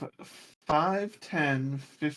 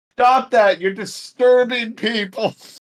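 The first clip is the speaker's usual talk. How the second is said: very loud, high-pitched put-on yell; 8 semitones higher, 11 dB louder than usual. Playing a character who yells at a wizard: yelling in character. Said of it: "I'm going to yell at them".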